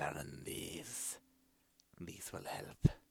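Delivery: hushed, soft, low whisper.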